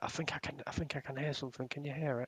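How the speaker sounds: hushed whisper, very quiet, barely audible. In a game, a player whispers in character to Belfair, whispering. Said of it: "I'm just whispering to to to um Belfair".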